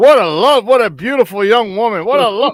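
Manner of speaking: lustful, admiring, smitten tone. Retelling how Brent Musburger reacted to pictures of a girlfriend: imitating Brent Musburger lusting. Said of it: "and he was like".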